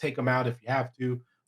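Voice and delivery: ordinary talk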